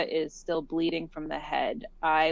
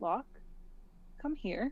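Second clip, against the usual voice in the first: overly calm, soothing, hushed, breathy near-whisper; 5 semitones higher, 11 dB quieter than usual. Imitating talking to an animal without alarming it, imitating an overly calm voice. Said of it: "in that voice that like like you, when you talk to an animal and you're trying not to like alarm them, but you're obviously being too calm about it".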